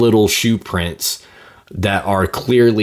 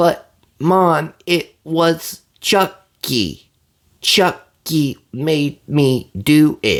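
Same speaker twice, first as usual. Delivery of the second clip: put-on very slow, drawn-out, high child voice; 8 semitones higher than usual. Complaining about a six-year-old movie character's slow cadence, imitating slow child talk. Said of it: "he's literally talking like this slow".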